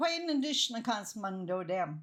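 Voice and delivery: normal talking voice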